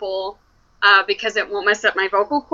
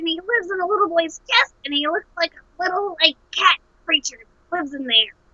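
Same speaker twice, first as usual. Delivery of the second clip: put-on alien creature voice, higher; 8 semitones higher, 3 dB quieter than usual. A voice actor shows the voice used for a parasitic alien character: parasitic alien creature voice. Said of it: "if I'm a parasitic alien".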